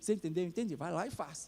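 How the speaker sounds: low, soft, close murmur.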